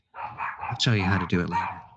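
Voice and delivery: hushed, half-whispered, behind-the-hand. Voicing a character who leans in close to a player: whispering. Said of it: "kinda whispering to you".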